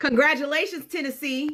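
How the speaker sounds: very high-pitched sarcastic tone. Reacting to news that Tennessee gerrymandered the state: sarcastic. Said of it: "I'm being sarcastic".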